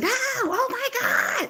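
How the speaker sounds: angry yell, very high, slow and drawn out. Retelling playing Tetris as blocks fell fast: imitating past yelling at the game. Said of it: "we used to be yelling".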